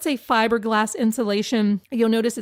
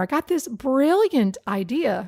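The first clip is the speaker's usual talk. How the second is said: dry, self-mocking, sarcastic, ironic tone; 3 semitones higher than usual. Describing a new way of putting up plastic while working: sarcastic. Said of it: "I'm being sarcastic here".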